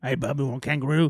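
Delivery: put-on gruff Australian voice. Mocking another speaker's earlier attempt: mocking a bad Hugh Jackman impression. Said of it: "That's what he did".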